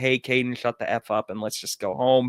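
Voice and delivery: plain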